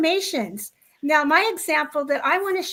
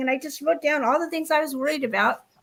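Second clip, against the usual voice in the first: ordinary talk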